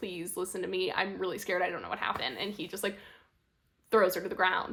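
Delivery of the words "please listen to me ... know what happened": mock sobbing, tearful voice. Retelling a show scene, a woman left crying on the floor pleads, imitating someone sobbing. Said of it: "She's like sobbing".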